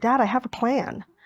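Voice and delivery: put-on proud, pleased delivery. Retelling coming home and telling Dad about a plan: imitating own proud announcement. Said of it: "I said to my dad very proudly".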